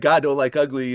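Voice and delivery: ordinary talk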